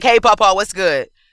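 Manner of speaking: normal talking voice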